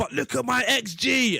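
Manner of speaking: very slow, dragged-out, drawn-out scream. Retelling own past complaints about X G: imitating own past screaming. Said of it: "I'm screaming".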